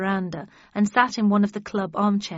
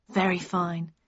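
plain reading voice

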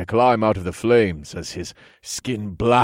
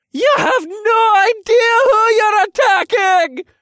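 very high, loud, shrill screeching; 6 dB louder than usual. Reading a story aloud, an outmatched attacker waves a jagged teacup; screeching. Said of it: "he screeched".

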